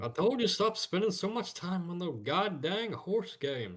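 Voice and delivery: very high, swooping, overdone put-on voice. Streamer insists he can't do it, then tries a Hank Hill impression.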